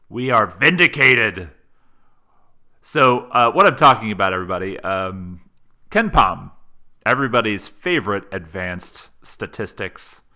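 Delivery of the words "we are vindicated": authoritative voice, louder. Explaining the voice used earlier was not an impression: authoritative voice. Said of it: "more of like a same authority".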